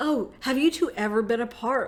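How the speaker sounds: put-on deadpan, straight-faced delivery. Retelling how he asked two guests a question on the segment, imitating a deadpan question. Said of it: "they just deadpan that he's like".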